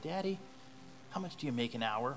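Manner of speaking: put-on shy, timid, small little boy voice. Telling a story, voicing a young boy asking his dad, timid little boy voice. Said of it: "he has a real timid voice".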